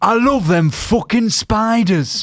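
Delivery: put-on high-pitched northern English accent. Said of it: "Why is she northern?".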